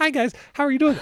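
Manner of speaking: squeaky, very high, rapid chipmunk chatter. Contrasting their own voice with a podcast host's deep voice: high-pitched voice. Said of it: "when I talk and I'm high pitched".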